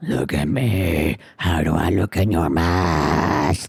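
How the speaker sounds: deep hoarse voice. Reading a story aloud, a brother calling out: deep raspy voice. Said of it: "he called out in a deep, raspy voice".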